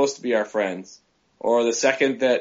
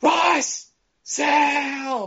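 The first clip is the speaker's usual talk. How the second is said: shrill, very high yell, one word drawn out. During a game, the speaker calls out to Russ and Sal, yelling. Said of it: "And I'm yelling".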